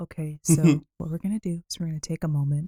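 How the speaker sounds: nicest, calmest, soothing low voice. After a shout-down, speaker shows how they'd come out talking: calmest, nicest voice. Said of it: "like the nicest voice".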